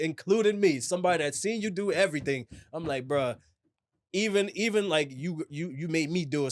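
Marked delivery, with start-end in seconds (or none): none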